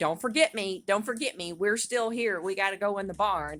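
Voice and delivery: play-acted desperate, pleading, frantic whinnying cry of a horse. Retelling a horse left outside the barn, voicing Ranger screaming. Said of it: "Ranger was out there screaming at me like".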